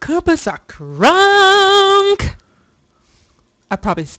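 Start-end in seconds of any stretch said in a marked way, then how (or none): 0.0-2.3 loud yelling, higher and louder. Shouting a catchphrase right after another speaker: shouting loudly. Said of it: "I was really loud right there".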